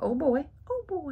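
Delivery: high, squeaky little cartoon mouse voice. Showing lipsticks from a Minnie Mouse collection, doing a Minnie Mouse impression. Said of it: "It's my best Minnie Mouse impression".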